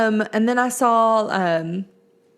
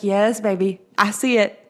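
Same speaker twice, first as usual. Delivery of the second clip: usual speaking voice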